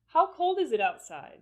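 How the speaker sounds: pitch falls on the word "outside". Open-ended question example: falling pitch on outside. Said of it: "So in this one, we will have falling intonation".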